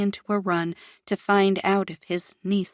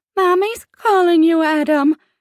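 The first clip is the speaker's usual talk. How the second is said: very high-pitched, very loud, shrill, jeering voice; 9 semitones higher, 8 dB louder than usual. In a restroom, one of the men taunts Adam in a high-pitched voice. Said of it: "in a high-pitched voice".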